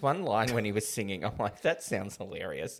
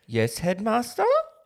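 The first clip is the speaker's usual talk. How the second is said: high, raised, questioning upward tone; 9 semitones higher, 8 dB louder than usual. Joking about impersonations, answering as young Scrooge: young Scrooge impression. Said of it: "I can do an impression of young Scrooge".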